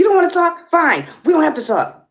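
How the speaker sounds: very high, shrill, rushed, rattled-off screaming yell. Speaker retells a man who followed them home, retelling a man's screaming. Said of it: "Then he screams".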